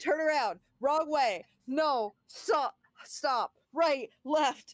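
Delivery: high, very slow, drawn-out, panicky, bossy put-on voice. Retelling guiding a panicking teammate: imitating own panicked bossy directions. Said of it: "you're like a panic G P S".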